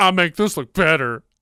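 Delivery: loud, selling TV commercial voice. Retelling a line from a guy on TV: imitating a guy on TV.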